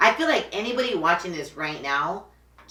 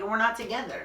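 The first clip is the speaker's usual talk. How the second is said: ordinary talk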